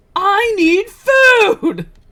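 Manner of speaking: very high, loud, anime-style scream. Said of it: "just screams".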